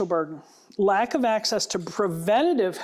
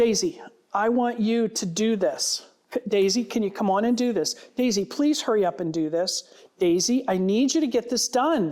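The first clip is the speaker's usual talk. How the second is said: pushy, pressing, insistent tone. Demonstrating verbal pressure on a listener, pressuring tone of voice. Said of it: "my tone of voice".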